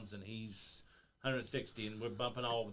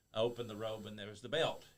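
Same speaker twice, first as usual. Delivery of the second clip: ordinary talk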